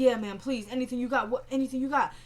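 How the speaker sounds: ordinary delivery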